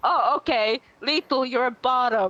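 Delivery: put-on strong Finnish accent. Speaker retells his mom's reply on the phone, in a strong finnish accent. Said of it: "in a really th- strong Finnish accent".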